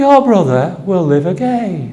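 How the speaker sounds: vicar's voice as if preaching from pulpit. A vicar imitating how another vicar in a dog collar would say it. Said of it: "one that speaks a little bit like this".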